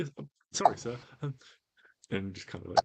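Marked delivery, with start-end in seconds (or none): 0.0-1.0 nervous, anxious voice, much higher and louder. Voicing a bullied halfling answering the one giving him orders, nervous halfling voice. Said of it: "a little bit nervously".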